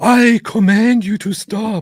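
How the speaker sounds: piercing, shrill, forceful yell at full volume. Showing the voice used to confront a prophet: demonstrating a loud voice. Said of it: "I go like".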